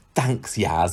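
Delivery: mock gratitude, sarcastic and acted. Recapping a show episode, speaker acts out a man thanking a woman, retelling a sarcastic thanks. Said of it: "gives her this sarcastic thumbs up".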